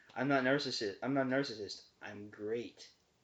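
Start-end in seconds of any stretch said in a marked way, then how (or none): none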